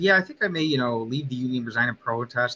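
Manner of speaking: ordinary talk, nothing marked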